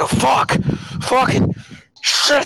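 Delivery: furious, very high-pitched angry outburst. Describing a man who breaks out while everyone stares: mock-angry outburst. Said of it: "he just seems so angry".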